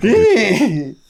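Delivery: high, loud, freaked-out yelp. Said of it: "He's just like".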